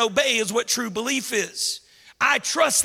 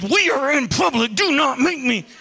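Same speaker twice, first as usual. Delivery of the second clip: tense, spoken through gritted, clenched teeth; 2 semitones higher, 4 dB louder than usual. Talking about parenting in public, imitating speaking through clenched teeth. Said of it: "like God speaking through the clenched teeth".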